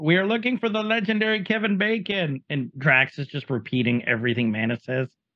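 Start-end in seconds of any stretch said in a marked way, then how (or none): 0.0-2.4 mock shouted, high-pitched yell. Retelling a scene where characters yell at a door: imitating characters yelling. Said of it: "they're yelling".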